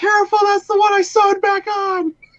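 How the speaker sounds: very high, shrill, shrieking scream. Discussing the Toy Story scene where Woody's arm gets ripped, retelling Andy's scream. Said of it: "Andy just like screams out".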